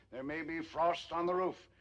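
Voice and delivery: ordinary talk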